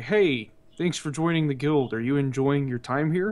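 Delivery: ordinary delivery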